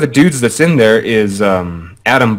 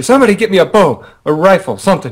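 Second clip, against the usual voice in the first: screamed loudly, pitched up; 8 semitones higher than usual. Retelling a group fight against a champion troll: retelling a scream. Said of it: "So I'm screaming".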